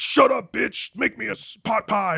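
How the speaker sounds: acted, slow, very high, drawn-out, furious angry rant. Retelling a character acting out his father: imitating an angry rant. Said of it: "the way he's acting angry".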